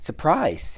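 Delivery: high-pitched exclamation. A mouse greets his friend, who has just opened his arms wide at the hedge: cried out. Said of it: "he cried".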